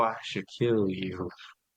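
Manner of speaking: hushed, menacing half-whisper under the breath. Retelling a woman's threat as she walked past the work crew: imitating someone half-whispering. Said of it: "she would whisper it".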